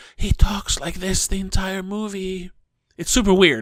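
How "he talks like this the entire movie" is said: rattling, corpse-like death rattle in the throat. Describing a pale movie character, the speaker mimics his death rattle voice. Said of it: "like a death rattle".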